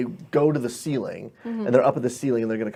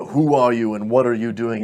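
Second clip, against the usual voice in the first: big booming voice. Retelling how a voice demanded who the speaker was, in a booming voice. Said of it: "this booming".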